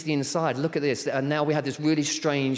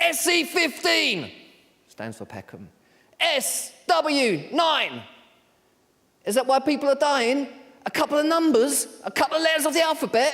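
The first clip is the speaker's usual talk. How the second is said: play-acted, very high, swooping, shouted theatrical delivery; 12 semitones higher than usual. Retelling a young girl's monologue at a showcase, imitating someone shouting. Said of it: "she shouted out".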